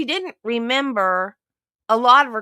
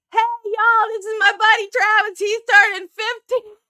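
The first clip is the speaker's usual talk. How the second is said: put-on very high, loud room-filling hollering; 11 semitones higher, 4 dB louder than usual. Retelling a birthday dinner, speaker acts out a man announcing Travis's birthday, retelling a yell. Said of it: "So the guy yells".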